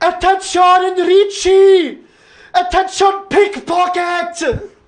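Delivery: very loud, very high, shrill, drawn-out yell. Describing a woman who shouts at pickpockets, imitating her loud yell in Italian. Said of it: "yells in Italian, very loudly".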